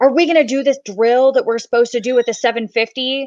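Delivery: put-on sudden irritated, angry yelling outburst. Retelling how a guy suddenly got mad: imitating someone yelling angrily. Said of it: "got really mad all of a sudden and started yelling".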